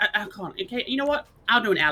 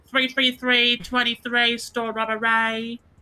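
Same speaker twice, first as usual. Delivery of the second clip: put-on English accent. Doing an impression of Alice after being asked: Alice impression. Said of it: "if I was to do an Alice impression".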